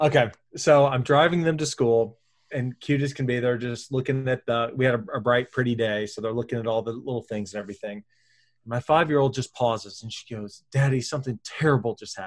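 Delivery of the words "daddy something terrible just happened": imitated serious and sincere tone. Retelling a five-year-old daughter's words on the school drive: imitating someone serious and sincere. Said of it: "she's just as serious and sincere as could possibly be".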